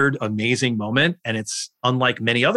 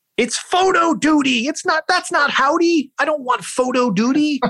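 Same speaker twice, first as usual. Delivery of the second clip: put-on shrill, very high-pitched shriek. Retelling a scene from the book where he sees the puppet: imitating Andy Kaufman screaming. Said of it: "And he screams".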